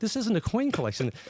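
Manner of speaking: high, scoffing, dismissive tone.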